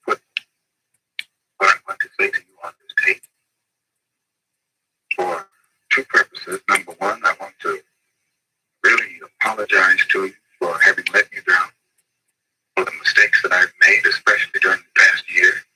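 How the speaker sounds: speaking in a whisper. Speaking on a taped apology, whispering. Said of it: "He's whispering".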